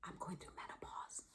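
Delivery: hushed, very quiet whisper. Showing how women whisper about going through menopause: whispered. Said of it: "we actually whisper the word menopause. We go".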